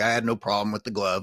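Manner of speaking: ordinary talk, nothing marked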